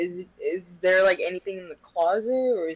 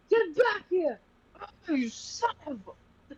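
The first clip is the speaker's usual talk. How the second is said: very high, long stretched-out hollering yell; 11 semitones higher, 4 dB quieter than usual. Voicing a character just shut in a closet: yelling. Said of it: "She's gonna yell".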